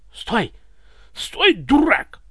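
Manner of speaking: hoarse, very high shout, voice cracking with fear. A narrator reads the tsar yelling at Ivan to stop: hoarse frightened shout. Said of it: "Осипшим от страха голосом заорал".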